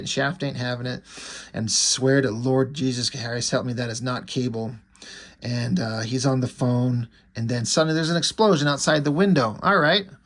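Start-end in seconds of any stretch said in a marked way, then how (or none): none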